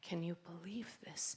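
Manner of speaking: barely-there, very quiet, hushed whisper. Retelling what people whispered to each other: imitating a whisper. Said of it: "when they whispered that".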